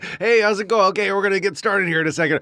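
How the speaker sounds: put-on announcer voice, high and fast.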